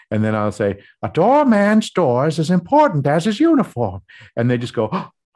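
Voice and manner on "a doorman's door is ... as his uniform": high, swooping cartoon-style voice. Recounting showing people a Curious George Doorman voice. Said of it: "I can make my voice sound like the Doorman".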